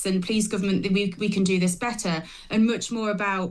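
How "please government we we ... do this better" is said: ordinary talk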